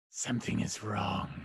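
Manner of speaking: gravelly dragon voice, gravel ground into every word. After a perception check, the game master voices Flamio speaking, gravelly Flamio voice. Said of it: "You hear the gravelly voice come from Flamio".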